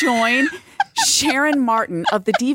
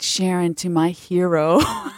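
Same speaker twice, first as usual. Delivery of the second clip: put-on mock-teasing tone, much lower pitch; 6 semitones lower than usual. Speaker retelling what she said on joining a fan club, retelling a mocking remark. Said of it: "And then I mockingly said".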